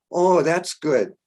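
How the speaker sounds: put-on strong German accent. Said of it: "Strong German accent".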